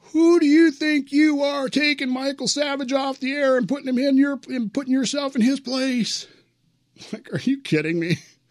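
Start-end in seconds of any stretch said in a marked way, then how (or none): 0.1-6.2 shrill, very high screamed tirade. Retelling how a stranger at the gym screamed at him: imitating a man screaming. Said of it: "just screaming at me".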